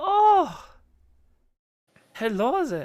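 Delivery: high, loud put-on Irish accent. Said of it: "What the fuck's going on with my accents today?".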